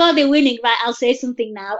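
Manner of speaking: ordinary talk, nothing marked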